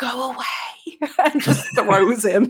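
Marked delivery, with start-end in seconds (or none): 0.0-1.1 eerily quiet, hushed, unnervingly still voice. A creature of her size turns to him in an eerily quiet voice. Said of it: "in almost a eerily quiet voice".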